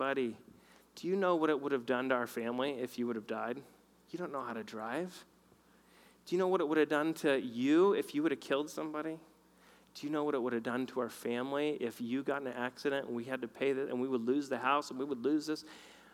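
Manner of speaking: gentle, loving, kind fatherly tone. Retelling a father's talk about the car situation: imitating a gentle loving rebuke. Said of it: "he was so gentle".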